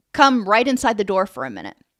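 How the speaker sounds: plain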